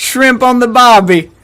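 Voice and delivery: put-on Australian accent. Showing off the accents they can do, in an Australian accent. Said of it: "I can do Australian, mate".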